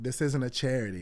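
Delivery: normal talking voice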